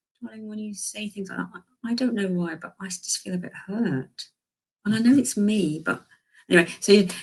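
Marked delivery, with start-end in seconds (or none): 0.2-4.3 nice, sugar-sweet, tender, gentle voice. Describing telling someone you feel hurt, in a nice, sweet voice. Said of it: "in a nice, sweet voice".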